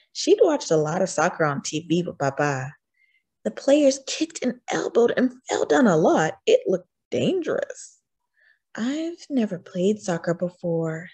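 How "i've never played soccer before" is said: hushed, low-key, softly spoken. A girl speaks within earshot of her coach; said quietly. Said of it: "she said quietly".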